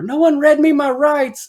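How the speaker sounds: shrill, very high, loud hollering. Retelling yelling at jail guards from a cell: imitating own past yelling. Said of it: "I remember yelling at the guards".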